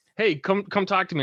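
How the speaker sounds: put-on yelling. Retelling a local tour guide calling out to passing tourists, imitating someone yelling. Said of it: "he's yelling at us saying".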